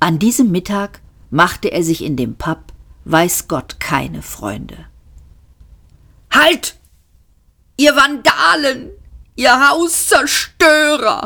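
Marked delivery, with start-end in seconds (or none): 6.3-11.3 very high, drawn-out bellowing roar. Arthur runs after the others and yells at them; roaring. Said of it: "brüllte Arthur".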